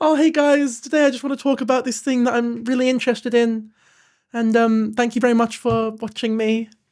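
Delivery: sweet, cute, chummy video-host voice. Showing others what a guy sounds like when he thanks people for watching, imitating a cute guy in a video. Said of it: "That's what he sounds like".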